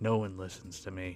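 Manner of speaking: very low, quiet, flat, soft monotone drone. Mocking an actor's one-liner, imitating William Hurt's monotone. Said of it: "Everything is so monotone".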